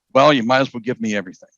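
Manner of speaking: plain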